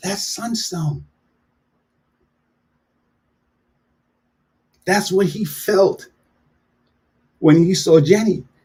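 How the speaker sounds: soft, tender, slightly moved, emotional voice. Recalling a scene from Forrest Gump, getting a little emotional. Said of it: "getting a little emotional about it".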